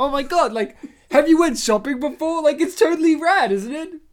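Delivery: put-on condescending tone, high, loud, incredulous gush. Speaker imitating another person's remark to them, imitating an incredulous tone. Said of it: "With this tone of, have you not done this before?".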